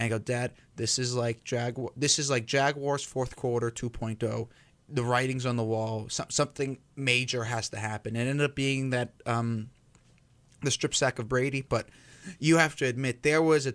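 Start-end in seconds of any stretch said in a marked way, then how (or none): none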